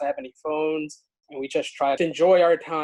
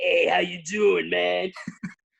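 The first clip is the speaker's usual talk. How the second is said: put-on slow goblin voice with a Brooklyn accent; 3 semitones higher than usual. Recalling how she suddenly started acting during a role-playing game, goblin with brooklyn accent. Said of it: "acting like this goblin with a Brooklyn accent".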